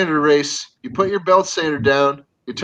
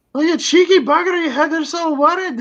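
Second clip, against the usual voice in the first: fake, put-on Scottish accent, pitched very high; 11 semitones higher than usual. Joking about a man waking up at his own wake, put-on Scottish accent. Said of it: "That's Scottish".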